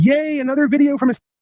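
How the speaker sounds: sarcastic, bright, gushing cheery chirp, pitched very high. Mocking the average person who rolls out of bed: imitating a cheerful average person. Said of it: "Rolls out of bed and goes".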